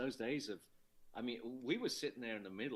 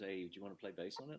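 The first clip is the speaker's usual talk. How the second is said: put-on sheepish voice, lower and quieter; 4 semitones lower, 4 dB quieter than usual. Retelling how Les offered a bass part on the album: imitating Les asking sheepishly. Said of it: "sort of sheepishly".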